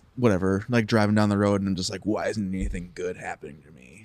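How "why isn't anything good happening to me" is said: soft, sulky, mopey, woe-is-me sad voice. Describing sulking while driving down the road, using a put-on sad voice. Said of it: "your sad voice that you use?".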